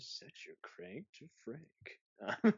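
seductive, breathy whispered voice. Asked to say the line more seductively, the speaker repeats it seductively. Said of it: "Say that more seductively".

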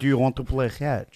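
put-on Israeli-accented speech. Speaker imitates a man offering to play catch, in an attempted Israeli accent. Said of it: "There it is".

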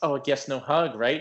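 mock knowing, pointed, rubbing-it-in sarcasm. Retelling a woman's jab at someone she has bad blood with, mock-sarcastic retelling. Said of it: "Christmas like so sarcastic".

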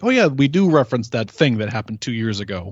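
ordinary talk

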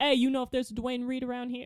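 put-on thick, laid-on New York accent, fast. Retelling a guy met while crossing the street, imitating a thick New York accent. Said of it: "super thick New York accent".

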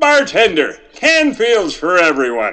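put-on old ad-spot commercial announcer pitchman voice. Doing a requested impersonation after a name is read: Jim Backus impression. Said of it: "his commercial work".

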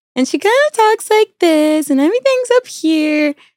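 high-pitched, tipsy mother voice. Telling how their mom talked after finishing long drinks, imitating mom's higher voice. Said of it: "her voice starts getting just a little bit higher".

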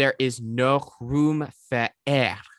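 slow, put-on French accent, ladylike style. Quoting a favorite movie line said by a lady at a hair place: imitating a French accent. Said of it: "That's like a French accent".

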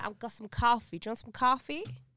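loud Brooklyn accent. Speaker imitates how people from Brooklyn talk, in a Brooklyn accent.

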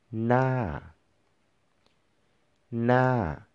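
falling tone on na, sloping down. Demonstrating a word's pronunciation in a tone lesson, say it with a falling tone. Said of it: "Falling or mountain tone".

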